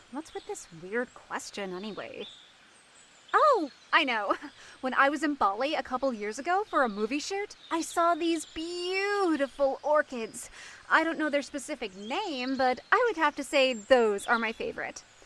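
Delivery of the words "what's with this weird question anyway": very low, quiet muttering under the breath. Asked about her favorite flower, muttering.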